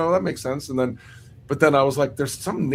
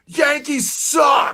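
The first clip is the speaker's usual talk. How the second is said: mock, very high, shrill stadium-crowd yell; 12 semitones higher, 4 dB louder than usual. Retelling a shout heard before playing a show in boston: imitating a crowd yelling. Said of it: "We were just yelling it".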